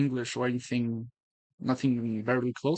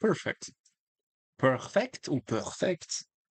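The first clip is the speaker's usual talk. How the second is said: exaggerated, over-the-top French accent; 3 semitones higher than usual. Analyzing a chess game, the speaker slips into a French accent. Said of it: "French accent has entered the chat".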